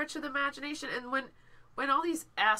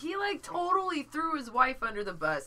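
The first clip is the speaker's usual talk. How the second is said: usual speaking voice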